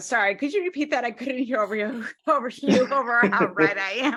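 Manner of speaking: words broken up by laughs throughout. Repeating a chat comment aloud, laughing while talking. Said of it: "I'm laughing at one of the people in the chat".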